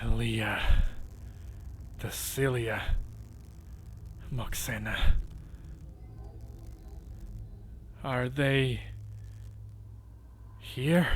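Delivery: spitting venom, full of hatred. The Medusa, frowning badly, demands an answer from the group, with pure vitriol. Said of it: "with kind of this pure vitriol on her voice".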